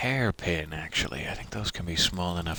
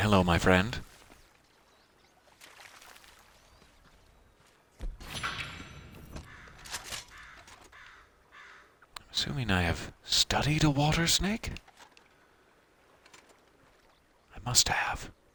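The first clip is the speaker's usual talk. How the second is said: hushed whisper up close; 4 semitones higher than usual. Spotting a water snake, speaker greets it while whispering. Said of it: "I don't know why I'm whispering".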